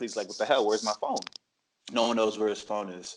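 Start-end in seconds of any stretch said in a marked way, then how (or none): 0.3-1.2 mock worked-up, exasperated, agitated tone. Retelling how a man grew more upset asking people about his phone, retelling an upset outburst. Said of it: "getting like more and more upset".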